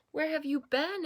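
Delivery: eager, excited. Narrator reading a story, voicing the fish greeting the returning frog, excited. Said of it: "asked the fish excitedly".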